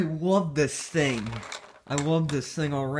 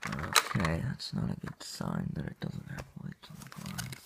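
whispered, hushed muttering; 11 semitones lower, 8 dB quieter than usual. Setting something up on camera for viewers, muttering to self. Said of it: "I'm just muttering to myself".

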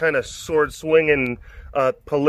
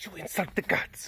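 breathy whisper, very soft, barely audible; 5 semitones higher, 12 dB quieter than usual. Speaker doing his impression of a character, Floki impression. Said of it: "It's my Floki impression".

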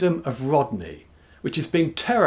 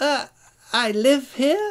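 nervous, uneasy, much higher, slower; 11 semitones higher than usual. A dragon answers a bigger, fiercer dragon waiting outside his cave, nervously. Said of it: "said Flamethrottle nervously".

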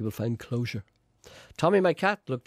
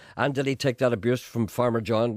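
ordinary delivery

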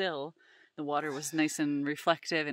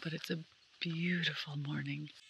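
hushed voice, quieter; 9 dB quieter than usual. Talking at dawn while someone sleeps nearby: speaking quietly. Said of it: "I'm trying to be quiet".

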